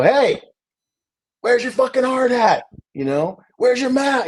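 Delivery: put-on very high, shrill, raging, angry scream. Speaker reenacts walking onto a job site up to a worker: retelling screaming at someone. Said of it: "Like I'm screaming at him".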